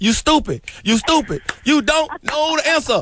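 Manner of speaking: scolding game-show host voice. Retelling how contestants were scolded on a game show. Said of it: "I'd be like".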